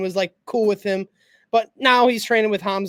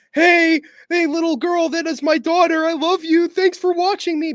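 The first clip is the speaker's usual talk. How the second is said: pitched-up, pandering fighter voice; 8 semitones higher, 4 dB louder than usual. Mocking a fighter's late-night post-fight speech: imitating Brendan Allen. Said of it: "Motherfuckers fighting at".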